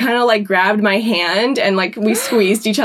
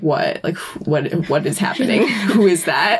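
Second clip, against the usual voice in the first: put-on confused tone, lower pitched; 4 semitones lower than usual. Retelling how Jake reacted while the speaker stood frozen watching: imitating Jake's confusion. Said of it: "Jake is like".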